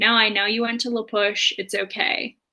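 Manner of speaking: plain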